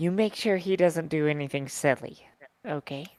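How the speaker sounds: soft, secretive half-whispered voice. Voicing a character quietly asking another to keep someone safe: half-whispering. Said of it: "whispering to him, even though there's nobody else around".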